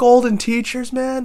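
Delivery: very high, squeaky, incredulous and amazed tone.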